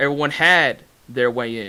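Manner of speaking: had said with strong stress. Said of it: "Everyone has their way in".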